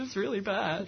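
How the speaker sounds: put-on tearful voice. Retelling going home from school after reading animal rights literature: imitating own past crying. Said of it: "crying, going".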